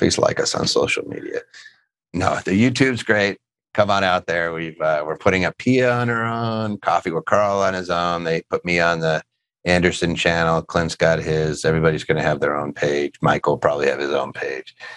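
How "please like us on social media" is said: low, whispered, sad tone. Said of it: "That sounded kinda sad".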